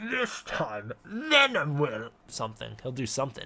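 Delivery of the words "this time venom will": comic-book villain voice. Trying out a Venom voice for a chat request: Venom voice. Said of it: "that's not the Venom voice he wanted me to do".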